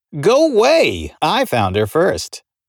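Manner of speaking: lighthearted, playful teasing, high and sing-song. G answers his brother Vince in front of her, playful. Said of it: "G said playfully".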